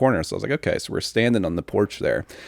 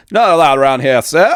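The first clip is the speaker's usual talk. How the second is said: botched, put-on British accent, pitched up; 7 semitones higher, 8 dB louder than usual. Describing british reenactors with muskets ordering people off the premises, bad british accent. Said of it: "I can't do a British accent".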